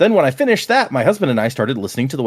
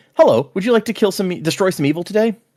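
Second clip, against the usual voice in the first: very calm, even delivery; 7 semitones higher than usual. Imagining how that voice would sound, the speaker acts out its line very calmly. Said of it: "that voice very calmly going".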